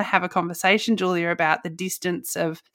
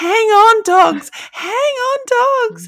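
put-on scream, higher and louder; 9 dB louder than usual. Retelling cheering alone in the car during a close game: imitating a scream. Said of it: "I was screaming".

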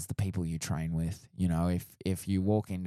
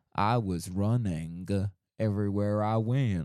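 slow, drawn-out American Southern drawl; 2 semitones higher than usual. Speaker describes how a character from the American South talks: Forrest impression. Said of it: "He sounds like he's from the American South".

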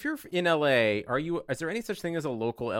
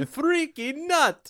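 high, loud put-on Mediterranean vampire accent; 5 dB louder than usual. Asked if that's what they say each time, the speaker repeats it: accent with Mediterranean spice. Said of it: "You said it with more Mediterranean spice".

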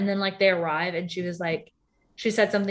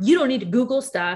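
put-on angry snap, higher; 5 semitones higher, 4 dB louder than usual. Retelling a quarrel where one person snapped: retelling an angry snap. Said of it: "she was just super angry".

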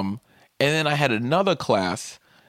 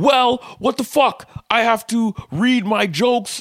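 mock, high-pitched yelling; 10 semitones higher, 4 dB louder than usual. Retelling a student's outburst in class: imitating a student yelling. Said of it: "the motherfucker started yelling at me".

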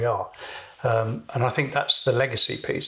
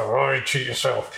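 put-on mumbling through clenched teeth. Retelling having to repeat a remark to a supervisor, mumbling through gritted teeth. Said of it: "I mumbled through gritted teeth".

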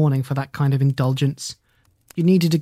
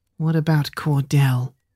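gentle, anger drained away, the fight gone. Troy, back at his desk chair, asks a question, in a soft voice. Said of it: "in a soft voice".

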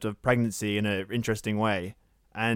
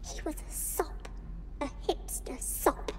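whispered, eerie, demonic golem-like creature voice; 10 dB quieter than usual. A woman talks to her unborn child after a killing, demonic golem-like voice. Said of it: "in a sort of demonic, golem-esque voice".

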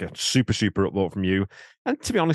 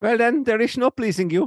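terrible fake Dutch accent, very high-pitched; 13 semitones higher, 4 dB louder than usual. Quoting a movie line, a speaker puts on a bad Goldmember Dutch accent. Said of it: "Terrible Dutch accent".

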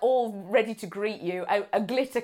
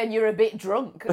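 ordinary delivery

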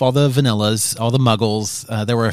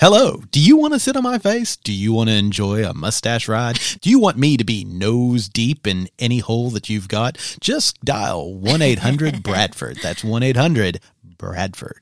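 swooping radio-ad announcer delivery. Jokingly redoing a line as a radio ad, in a radio announcer voice. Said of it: "I sounded like a radio announcer".

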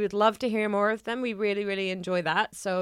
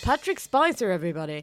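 put-on radio announcer voice, announcer-style call. Introducing someone to everybody: put-on radio announcer voice. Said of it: "I just want to do this radio voice every time".

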